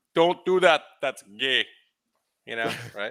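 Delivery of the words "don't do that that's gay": put-on thick, very heavy Pakistani accent, loud and high. Imitating his old boss from the hotels, in a thick Pakistani accent. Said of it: "in his very thick Pakistani accent".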